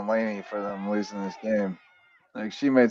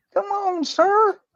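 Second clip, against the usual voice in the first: put-on Southern accent, higher pitched. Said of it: "soccer lingo and Southern accent".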